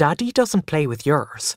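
ordinary talk

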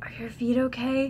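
put-on whisper. Recounting being stared at, the speaker quotes a man leaning down: retelling a whisper. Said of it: "leaned down and whispered".

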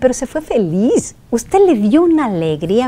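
ordinary talk, nothing marked

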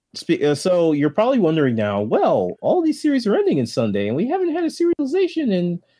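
very high, swooping cartoon squeak. A show host keeps talking to listeners in a Mickey Mouse voice. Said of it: "Why am I doing Mickey Mouse voice?".

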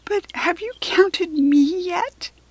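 small, squeaky, high bunny voice. Narrator voicing a small brown bunny speaking to Kirsty, in a squeaky bunny voice. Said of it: "the bunny squeaked".

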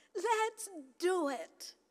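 put-on high, bright, joyful child voice. Retelling how little Harper echoed her parents, imitating Harper's joyful voice. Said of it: "There was this joy in her voice".

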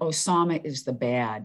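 ordinary talk, nothing marked

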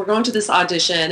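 plain

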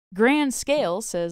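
plain

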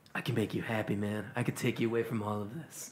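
low, deep surfer-dude voice. A character comes up to the listener: Daddy's deep surfer voice. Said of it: "deep and for some reason like a surfer voice".

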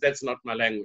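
ordinary talk

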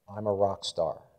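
very soft, small, hushed, low voice. Leading a group exercise, saying the phrase for everyone in a very soft voice. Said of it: "And in a very soft voice".

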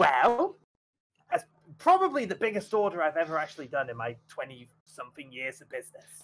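put-on teeny little goblin voice, swooping. Narrating a game, voicing a tiny goblin counting gold, in a tiny goblin voice. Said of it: "and it's a teeny tiny little goblin".

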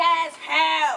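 New York accent. Teaching practice phrases for speaking like a New Yorker, in a New York accent. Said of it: "move your chin way out and say".

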